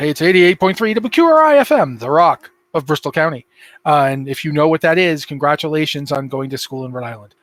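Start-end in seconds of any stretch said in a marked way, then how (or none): 0.0-3.5 put-on swooping radio DJ announcer voice. Recalling the times they slip into it on air: radio DJ voice. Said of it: "when I remember going".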